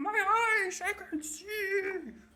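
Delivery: shrill, booming, very high, loud drawn-out agonized scream. Voicing a blinded creature screaming in pain: character screaming in pain. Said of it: "you can hear him screaming".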